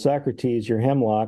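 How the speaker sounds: ordinary delivery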